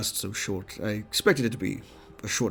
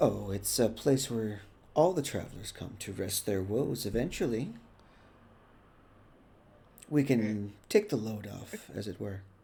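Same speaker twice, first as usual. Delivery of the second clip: welcoming innkeeper hostess character voice; 4 dB quieter than usual. Voicing a half-elven woman at a desk greeting a visitor: voicing a half-elven woman. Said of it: "she greets you".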